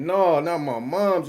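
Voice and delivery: mock crying through the words, very slow. Retelling hearing from the doctor that his mother didn't make it: retelling crying. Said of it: "I'm crying".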